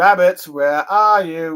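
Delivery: calling out slowly and loudly. Retelling a hunter calling for the rabbits: Elmer Fudd voice. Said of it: "One of them sounding like, you know, Elmer Fudd".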